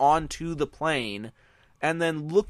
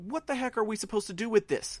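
play-acted, high, frantic, freaked-out panic; 5 semitones higher, 6 dB quieter than usual. Acting out how they'd react to a stowaway: acting freaked out. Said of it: "I would have been freaking out going".

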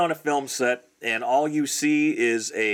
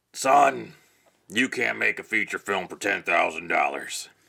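put-on gruff old cowboy voice, pitched much lower; 6 semitones lower than usual. Act out a man replying to your feature film budget, in a gruff old cowboy voice. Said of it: "Had a gruff old kind of cowboy voice".

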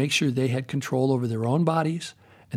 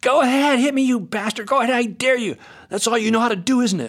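mock piercing, shrill, very high scream; 10 semitones higher, 6 dB louder than usual. Retelling an argument heard from the next tent: imitating someone screaming. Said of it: "She was screaming".

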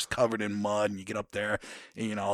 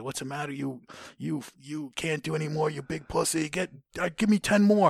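drill-instructor style yelling with rising pitch; 7 semitones higher than usual. Retelling instructors mocking a recruit who can't do more push-ups: imitating drill instructors yelling. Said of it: "they're yelling at you".

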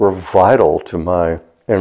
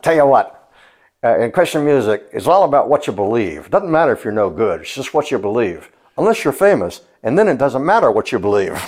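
fake New York accent, pitched up; 5 semitones higher than usual. Retelling Mark's answer to Tonio's question: Mark's put-on New York accent. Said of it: "Mark put on like a New York accent and said".

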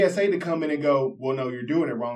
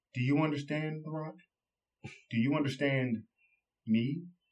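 put-on deadpan delivery, much quieter; 7 dB quieter than usual. Recounting a wrestler's line into the camera before a match, imitating The Rock's deadpan. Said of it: "he deadpan looks into the camera and says".

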